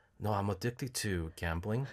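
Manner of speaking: very quiet, hushed, sorrowful, sad voice. Retelling messing with a loan caller, imitating own sad voice. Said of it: "I sound really sad".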